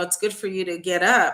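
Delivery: ordinary talk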